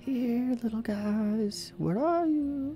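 very high, very slow half-whisper. Voicing a character on hands and knees at a fireplace: half-whispering. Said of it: "Just kinda whispering to her".

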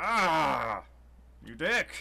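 loud pained yell with a drawn-out ah. A character struck in the back by a sword yells out in pain. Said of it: "He yells out in pain".

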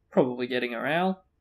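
ordinary delivery

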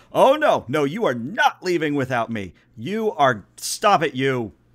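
very loud, booming yelling shout. A narrator voices someone shouting as the shuttle ramp recedes: very loud sister-like shout. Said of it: "a very loud sister-like shout".

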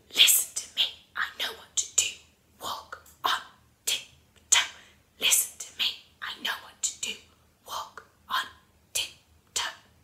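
soft, steady, unvoiced stage whisper. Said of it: "put it into a stage whisper".

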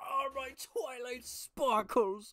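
drawn-out, very loud, high yelp of pain. Imitating a brony kicked in the crotch: imitating someone kicked in the crotch. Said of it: "something just kicking a brony in the crotch".

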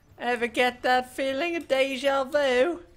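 mock drunk character voice. Trading Tracer voice lines, the speaker does a drunk Tracer impression. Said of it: "Is that what Tracer would sound like if she was drunk?".

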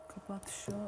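soft unvoiced whisper under her breath, to herself.

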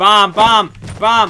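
loud, high, frantic shouting.

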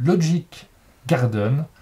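slight English accent.

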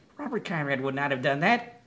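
ordinary talk

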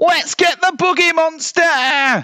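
shrill, very high yell. Narrator reads the littlest animal's cry at the crash-landed bear, shouting. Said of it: "shouted the small".

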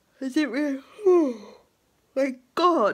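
loud, drawn-out words spoken through a yawn. Recounting going for a little wander to pass the time, yawning. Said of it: "can I stop yawning?".

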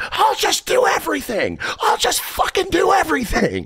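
very high, squeaking, squeaky outburst. Retelling how they screamed at a guy about moving a truck: retelling a squeaky scream. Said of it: "I screamed at this guy".

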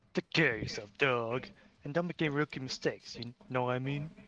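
easygoing, cool, laid-back buddy voice. Taking a turn auditioning for a voice role, the speaker tries a line: cool best friend voice. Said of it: "I could do a cool best friend".

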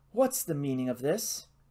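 plain

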